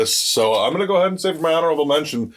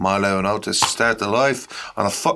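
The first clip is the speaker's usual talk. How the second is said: sudden put-on Irish accent; 3 semitones lower than usual. Reading a film description aloud, slipping into a sudden irish accent. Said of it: "I just went Irish all of a sudden".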